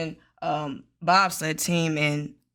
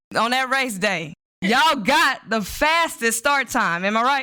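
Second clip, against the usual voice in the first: assured, confident delivery in a raised, higher voice; 6 semitones higher, 5 dB louder than usual. Asking the same question again, now with more confidence: more confident. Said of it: "let me say it more confidently".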